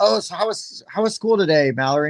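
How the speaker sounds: really nice, sweet, kind kindergarten-teacher voice. Recalling how they mimicked a friend's kindergarten teacher asking about school: imitating a sweet teacher. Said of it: "whenever I did an impression of her teacher".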